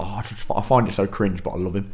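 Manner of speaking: usual speaking voice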